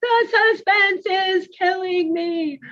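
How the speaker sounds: mock gleeful, joyful scream, very high pitched. Retelling what an excited student kept saying in class: imitating joyful screaming. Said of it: "So he was joyfully screaming".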